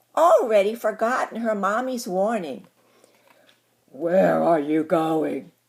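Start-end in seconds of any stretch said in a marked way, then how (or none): 3.9-5.4 deep, growling wolf voice. Reading a story aloud, the wolf asks the girl something: growling. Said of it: "growled the wolf".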